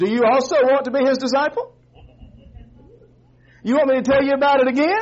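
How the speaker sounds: dry, mocking tone. Retelling how the ex-blind man answers his questioners, retelling a sarcastic reply. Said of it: "And sarcastically he says".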